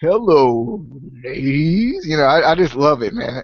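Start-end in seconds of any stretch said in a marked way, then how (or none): 0.0-2.0 freaking deep voice, dropped way down. Quoting a favourite wrestler who makes them laugh: deep Val Venis voice. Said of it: "It's so freaking deep".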